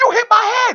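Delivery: very high, loud, put-on scream. Retelling a wrestler screaming at the referee: imitating someone screaming. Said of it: "screams at him".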